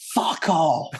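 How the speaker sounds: high pitch, projected out, relaxed and easy. Recalling a World Cup final moment, the speaker is imitating Mary Earps screaming. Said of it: "her screaming at the top of her lungs".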